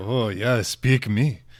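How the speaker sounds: put-on deep woman's voice. Asked for a sample of his characters, the speaker gives a deep Svetlana voice. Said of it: "she's got a deep voice, that Svetlana".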